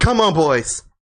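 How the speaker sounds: yelling, shouting. Narrating a scene, a middle-aged man summons his men to ambush the listeners, yelling. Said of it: "And then he yells".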